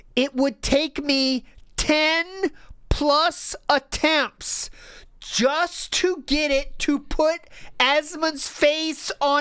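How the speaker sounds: very slow, deliberate read. Reading a passage aloud to show how busy someone is, very slow reading. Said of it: "I want to read this very slowly".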